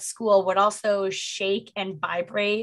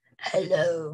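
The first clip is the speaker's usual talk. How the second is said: low, spooky, eerie, creepy put-on voice; 4 semitones lower than usual. Telling a story about voices heard, in a creepy put-on voice. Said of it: "that's not that deep. That's more like creepy".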